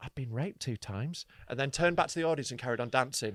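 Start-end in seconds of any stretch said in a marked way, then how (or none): 0.0-1.3 quiet, hushed voice, kept low. Recounting a show, the speaker acts out the woman turning to them unheard by the audience: retelling a quiet aside. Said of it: "quietly, so the audience wouldn't hear".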